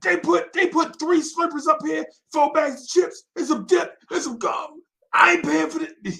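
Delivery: mock agitated outburst, very high pitch. Retelling how Keystone reacted at the counter: imitating someone getting worked up. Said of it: "Keystone, calm down, bro".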